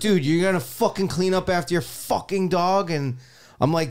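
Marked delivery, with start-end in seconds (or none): 0.0-2.9 furious, high-pitched angry yelling. Retelling busting outside shirtless at a dog walker: imitating his own angry voice. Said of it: "with the angry voice".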